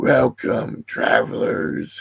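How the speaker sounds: hoarse, rough, grating, raspy voice. Narrator voicing a bound, armored figure welcoming travelers, raspy. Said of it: "he rasps".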